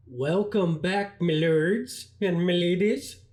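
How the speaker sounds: silly, cartoonish, put-on Swedish-sounding accent. Opening his channel's game video, a speaker greets viewers: Swedish Chef voice. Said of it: "I sound like the Swedish chef".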